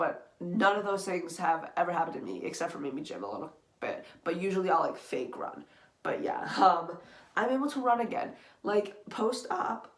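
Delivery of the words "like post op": voice cracking on the words "post op". Talking about being able to run again after surgery, voice cracking. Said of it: "voice crack".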